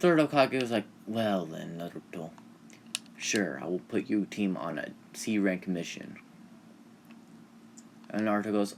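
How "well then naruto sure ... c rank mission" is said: usual speaking voice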